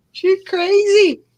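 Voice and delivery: high, slow, mocking clerk voice.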